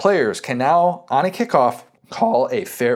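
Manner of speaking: slow delivery, voice breaking mid-sentence. Podcast host explaining a new college football kickoff rule, voice cracking. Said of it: "that was a nice voice crack".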